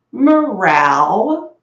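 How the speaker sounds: drawn-out meow in a man's voice. Retelling a cartoon cat that meowed like a man: imitating a man's voice meowing. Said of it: "like a man's voice".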